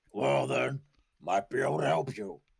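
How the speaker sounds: sly magic man character voice. Narrating a scene, the speaker voices Zack offering to help, surprisingly deep Zack voice. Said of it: "his voice is surprisingly deep".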